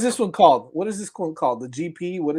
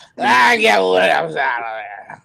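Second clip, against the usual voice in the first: put-on, loud, rough, boozy twenty-something sports fan; 4 semitones higher, 7 dB louder than usual. Redoing the impression of a fan: imitating a drunk twenty-five-year-old. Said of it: "A drunk twenty-five-year-old".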